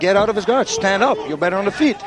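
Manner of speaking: ordinary talk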